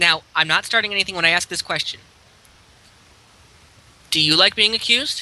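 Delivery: even, very calm voice with quick delivery. Asking the drunken dwarf a question about being accused: very calm voice. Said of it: "I ask in a very calm voice".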